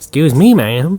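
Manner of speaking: put-on sleazy salesman voice. Joking as the NHK man at the door: put-on sleazy salesman voice. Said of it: "really wish he used that voice".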